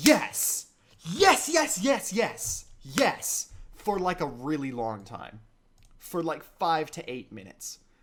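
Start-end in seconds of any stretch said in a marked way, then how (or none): 0.0-3.5 hyped, excited shouts of "yes", higher and louder. Retelling reading a hype manga panel alone in a room: imitating own excited yelling. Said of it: "I just kept saying yes emphatically".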